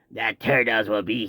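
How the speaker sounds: deep, heavy smoker's voice. Speaker imitates the guy in their commercial, in a heavy smoker's voice. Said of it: "he sounds like he just smoked way too much cigarette and cigars".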